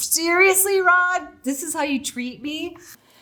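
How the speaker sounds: put-on very high-pitched, shrill yelling. Retelling an argument across a driveway: retelling a yell at rod. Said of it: "yelling at Rod across my driveway".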